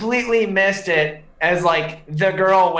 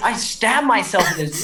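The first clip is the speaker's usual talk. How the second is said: ordinary delivery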